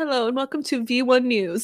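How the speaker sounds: put-on news reporter voice. Asking to be put in the movie, showing off a news reporter voice. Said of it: "I can play a reporter".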